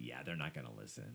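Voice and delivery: low, soft, quick resigned tone.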